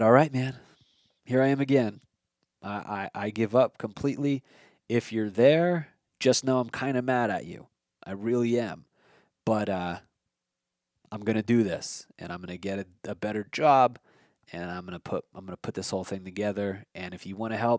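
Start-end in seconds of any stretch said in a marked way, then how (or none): none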